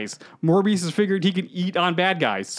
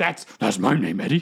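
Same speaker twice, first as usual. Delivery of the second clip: put-on monster voice, lower pitch; 8 semitones lower than usual. Recapping a scene where Eddie and Venom watch the news: Venom voice. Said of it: "I don't know why I'm doing that voice for Venom".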